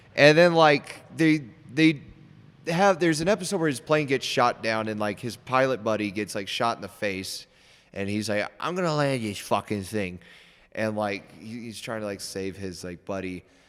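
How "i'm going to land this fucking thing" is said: bad put-on New York accent, quieter. Describing a war show scene, quoting the main character in a bad New York accent. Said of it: "he's got the worst like New York accent ever".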